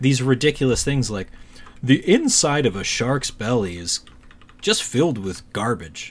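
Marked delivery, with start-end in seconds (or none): 1.8-6.1 mock deadpan serious narration. Describing a show's narrator, the speaker imitates his deadpan serious reading. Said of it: "with this deadpan seriousness".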